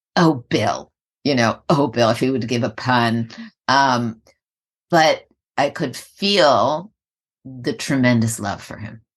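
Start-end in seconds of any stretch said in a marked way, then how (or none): 0.2-2.1 put-on self-righteous tone. Recalling how a woman reacted to a man's puns, mock sanctimonious tone. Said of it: "maybe the word is sanctimonious".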